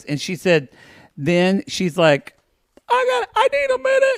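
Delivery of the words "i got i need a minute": play-acted, very high-pitched voice on the edge of crying. Retelling what a woman said before sobbing: imitating someone about to cry. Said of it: "she starts sobbing".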